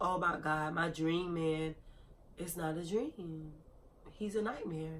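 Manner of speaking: very quiet, barely audible, tearful crying voice. Retelling sitting in the driveway at mom's house, imitating own crying. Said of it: "like crying like".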